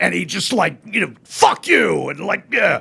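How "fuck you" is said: put-on harsh voice, higher and louder. Imitating a harsh guy brought in at the radio station: imitating Troy. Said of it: "and he talked like this".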